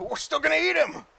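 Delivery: high, loud shouted orc voice. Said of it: "one of them shouts out in orc".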